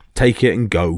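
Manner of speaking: ordinary delivery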